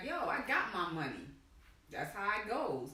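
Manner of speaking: plain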